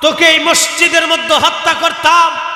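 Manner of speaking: scolding, rebuking tone.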